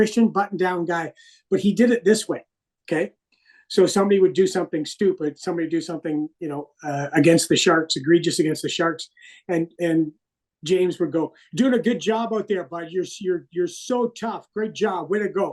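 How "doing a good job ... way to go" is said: dry, sarcastic, acted-out tone. Retelling how a teammate mocked opponents: imitating sarcastic praise. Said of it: "really sarcastic about it".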